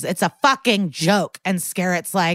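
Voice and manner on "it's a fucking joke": louder and much slower. Retelling a courtroom scene, Stabler repeating his remark to the judge, louder. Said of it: "Stabler louder goes".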